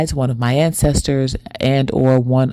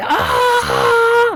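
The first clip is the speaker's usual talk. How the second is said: very high-pitched yell full of emotion. Retelling a dream of screaming into a mirror: imitating own screaming. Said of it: "I was yelling like".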